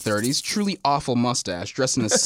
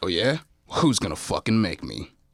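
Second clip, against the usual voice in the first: scowling villain voice, much lower; 5 semitones lower than usual. In an acted scene, the bad man defies the establishment's owner, scowling. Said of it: "A bad man, scowling".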